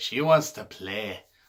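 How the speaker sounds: bad, rough, clumsy attempt at Scottish accent. Describing Nikki coming out, the speaker quotes her in a terrible Scottish accent. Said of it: "I'm sorry for that terrible Scottish accent".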